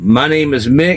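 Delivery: ordinary talk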